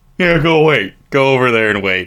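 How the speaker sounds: usual speaking voice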